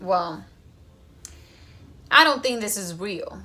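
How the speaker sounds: mock arrogant, scoffing, very sarcastic tone. Retelling what she told god in church: retelling own sarcastic remark. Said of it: "Very sarcastic".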